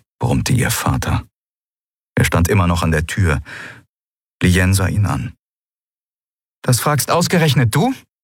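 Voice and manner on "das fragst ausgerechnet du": sharp, pitched-up voice. A daughter answers her father's question at the door, sharper than intended. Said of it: "Es klang schärfer, als sie beabsichtigt hatte".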